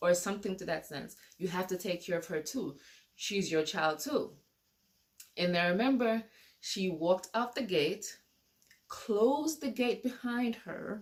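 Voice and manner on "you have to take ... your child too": ordinary talk, nothing marked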